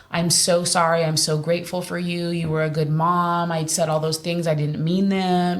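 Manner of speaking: usual speaking voice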